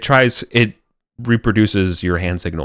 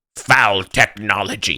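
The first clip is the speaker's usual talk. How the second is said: put-on British-accented villain voice. In a tabletop game, the villain answers a player's energy sword in a British accent. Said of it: "begins to like give more and more of like a British accent".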